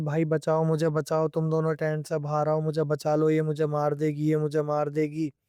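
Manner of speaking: usual speaking voice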